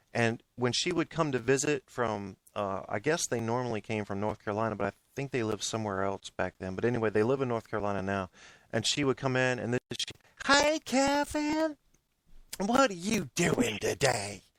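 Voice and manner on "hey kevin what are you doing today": very high, swooping, stretched, drawn-out, bursting energetic voice. Retelling how an aunt greeted them on visits: imitating aunt's high-pitched energetic voice. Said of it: "she had this high-pitched voice and this maximum amount of energy".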